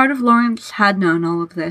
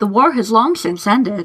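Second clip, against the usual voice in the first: ordinary delivery, nothing marked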